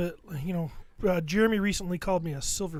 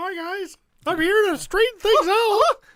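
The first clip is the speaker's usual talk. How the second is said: voice going way up high and loud; 13 semitones higher, 8 dB louder than usual. Greeting the group in a joking put-on voice: Mickey Mouse voice. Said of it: "It's supposed to be Mickey Mouse".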